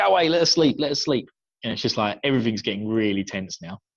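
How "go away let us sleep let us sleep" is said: put-on high yelling voice, shouted out. Recounting a tense night scene, the speaker quotes someone's outburst: retelling a shout. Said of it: "Matt shouts out".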